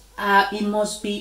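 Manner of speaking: ordinary delivery, nothing marked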